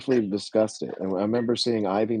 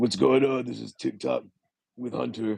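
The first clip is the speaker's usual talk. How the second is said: put-on showman-style wrestling persona host voice; 3 semitones higher than usual. Imagining a wrestler hosting his own weekly TikTok: imitating Triple H. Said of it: "Triple H's TikTok of the week".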